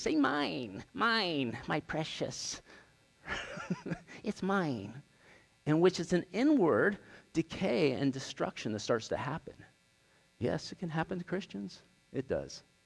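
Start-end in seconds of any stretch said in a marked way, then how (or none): 0.1-5.0 very slow, clinging, grasping creature voice, every word drawn out. Preaching about holding on tight to what you have, doing a Gollum voice. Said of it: "act like Gollum from Lord of the Rings".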